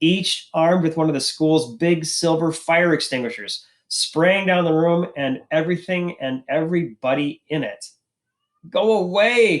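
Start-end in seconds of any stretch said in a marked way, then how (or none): 8.7-9.6 trembling, high, quavering, pleading voice. Narrator reads Joel pleading with two boys spraying fire extinguishers, quavering and pleading. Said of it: "Joel pleads in a quavering voice".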